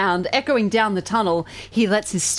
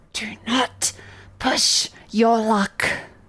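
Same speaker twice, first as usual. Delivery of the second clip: hissing, words pushed out on breath; 2 semitones higher than usual. A game master voices the goblin warning a player, hissing under his breath. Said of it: "he hisses at you under his breath".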